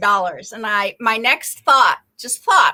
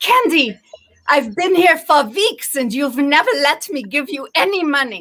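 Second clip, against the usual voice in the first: put-on German woman's accent, higher; 4 semitones higher than usual. Retelling what a little German lady said to her, in a German accent. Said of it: "That's this German way of speaking".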